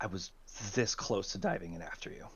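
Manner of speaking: soft, hushed whisper, very close up. Voicing a ship captain greeting a returning player character: Captain Eli whispering. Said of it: "you hear her whisper".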